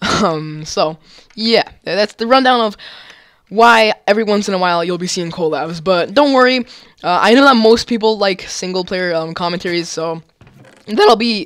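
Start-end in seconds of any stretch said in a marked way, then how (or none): 9.9-11.5 cracking, breaking voice. A youtuber telling viewers about the channel's plans; voice cracking. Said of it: "that voice crack".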